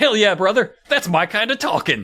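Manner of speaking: put-on overstimulated, rushed, way-too-excited gushing. Retelling a favourite line from the episode: imitating an overexcited Wild Bill. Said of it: "He gets way too excited".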